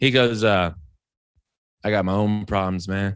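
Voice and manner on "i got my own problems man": straight-faced, low, deadpan delivery. Retelling a heckler's line from a comedy show: imitating a deadpan delivery. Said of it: "I'm gonna try to say it with a straight face".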